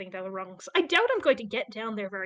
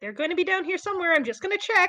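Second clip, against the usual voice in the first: loud, pitched-up yelling; 8 semitones higher, 5 dB louder than usual. Playing a character calling up an elevator shaft: yelling up a shaft. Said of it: "I'm just yelling back up".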